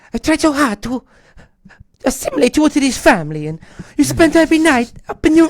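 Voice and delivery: put-on very high, slipped-into Italian accent. Retelling what a crying woman said when he said goodbye in the kitchen, in an Italian accent. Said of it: "for some reason I'm talking Italian".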